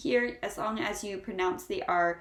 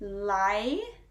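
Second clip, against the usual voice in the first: library said very slowly, sound by sound. Showing how a word sounds, saying library very slowly, spread out. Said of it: "I will say it very slowly and spread out for you".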